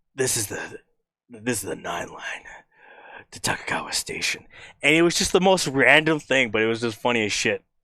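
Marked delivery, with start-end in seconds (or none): 0.2-4.5 forced, breathy, try-hard sultry voice. Retelling a sound someone recorded for a sample pack: imitating someone's sultry voice. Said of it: "in his best, like, sultry voice".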